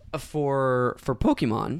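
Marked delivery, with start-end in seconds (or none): 1.0-1.8 voice cracking and breaking mid-word. Giving a prediction for the year: voice cracking. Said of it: "as my voice cracks".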